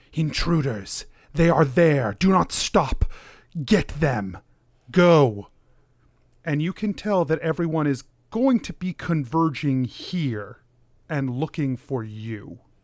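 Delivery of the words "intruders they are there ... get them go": strange, commanding woman's voice. Narrating to a player, the speaker voices the message heard inside, in a woman's voice. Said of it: "with a woman's voice that you have never heard".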